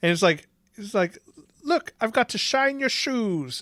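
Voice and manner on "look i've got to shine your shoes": high, slow, bad mock Irish accent. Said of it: "could not do a fucking Irish accent".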